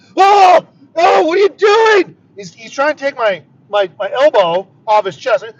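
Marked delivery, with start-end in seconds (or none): 0.2-2.2 play-acted, frantic, very high-pitched, loud panicked cry. Retelling driving into oncoming traffic, he voices the guy with him: imitating a panicking man. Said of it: "this guy is fucking panicking".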